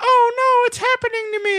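very high, hapless little cartoon cry, voice pushed up. Describing how the gingerbread man is drawn, then doing a Mr. Bill type voice. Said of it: "making him like a Mister Bill type voice".

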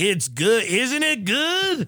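slow, drawled, put-on Texas twang. Retelling how excited people ask whether the food is good, in a put-on texas twang. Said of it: "I'm doing this Texas accent, this twang".

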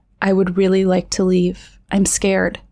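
ordinary delivery

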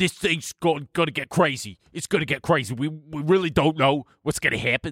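put-on exaggerated East Coast man's voice. Imitate a guy on TikTok for the others, in a super East Coast guy voice. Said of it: "who's like this super East Coast guy".

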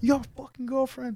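high, climbing, screaming inner voice. Acting out what an inner voice would shout at a drunk tempted cheater: imitating an inner voice screaming. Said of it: "something's gonna be screaming, like".

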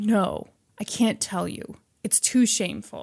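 slow, breathy, begging whisper. Retelling a prisoner's words to a visitor: imitating someone pleading.

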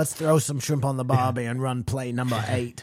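put-on Australian accent. Joking about a football player after a hard hit, in a put-on Australian accent. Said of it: "started speaking with an accent".

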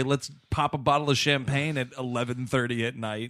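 ordinary talk

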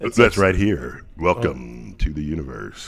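very low, deep narrator voice. Asked what the planetarium voice is, the speaker shows it: planetarium voice. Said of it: "what's the planetarium voice?".

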